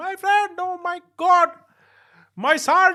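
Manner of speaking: very high, slow, drawn-out put-on Pakistani accent. Retelling what a man who ran up to him said, in an imitated Pakistani accent. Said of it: "so I'm making the accent".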